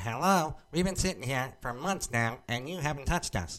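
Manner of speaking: high, taunting, put-on little elf voice. Voicing old VHS tapes that mock the speaker: put-on elf voice. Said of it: "they sound like elves a little bit".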